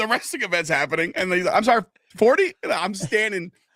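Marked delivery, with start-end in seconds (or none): 1.5-2.5 loud, pitched-up griping complaint carrying over noise. Retelling how Dad reacted to the price: imitating Dad complaining loudly about price. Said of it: "I can hear him over the crowd".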